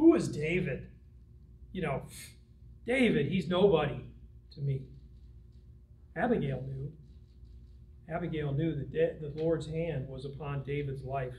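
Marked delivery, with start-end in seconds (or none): 0.0-4.8 derisive, scoffing, mocking tone. Acting out a man's reply to the young men in verse 10: retelling a mocking reply.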